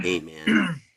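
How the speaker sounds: whispered, breathy, mellow, laid-back stoner voice. Showing how they talk at home: stoner accent saying man. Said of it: "my accent is just stoner".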